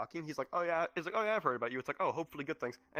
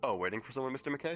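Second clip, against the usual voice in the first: ordinary delivery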